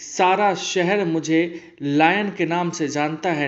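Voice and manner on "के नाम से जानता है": normal talking voice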